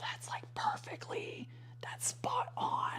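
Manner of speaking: soft, hushed, whispered words. Talking about feeling less strained, whispering. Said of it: "I don't know why I'm whispering".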